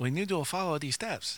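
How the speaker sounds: put-on accent from Asia.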